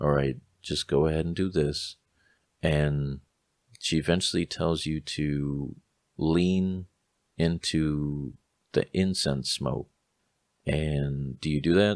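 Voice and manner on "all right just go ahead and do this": soothing, raspy, gentle motherly voice, quick and calm. Describing the woman giving instructions during the test, imitating gentle motherly voice. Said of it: "it's like this gentle, almost like motherly".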